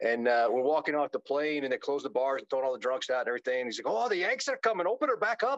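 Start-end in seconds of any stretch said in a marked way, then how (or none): 3.9-5.6 bad, terrible put-on Irish accent, very high. Retelling what an Irish man said as you walked off the plane, terrible Irish accent. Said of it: "That was a terrible accent".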